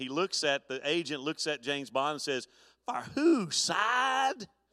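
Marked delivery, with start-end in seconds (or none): 2.9-4.5 put-on South Louisiana accent, much higher, slower. Retelling how the agent looks at James Bond and answers him, in a South Louisiana accent. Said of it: "in that South Louisiana accent".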